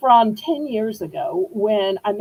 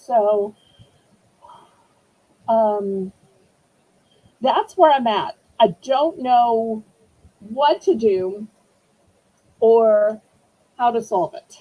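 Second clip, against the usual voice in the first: fighting back tears. Explaining a stuck two-step verification problem to YouTube viewers, holding back tears. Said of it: "I'm trying not to cry".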